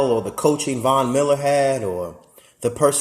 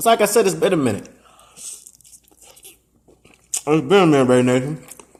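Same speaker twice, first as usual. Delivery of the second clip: talking with mouth full while eating, faster. Greeting viewers after a long time away, talking while eating. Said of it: "excuse me for um for eating".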